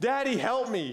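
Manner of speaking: put-on frantic, hysterical, high-pitched crying little-girl voice. Retelling a daughter on a bike calling for help: imitating hysterical screaming. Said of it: "screaming hysterically".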